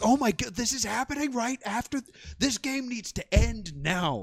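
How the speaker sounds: high-pitched mock scream, let out loud. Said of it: "and I just screamed".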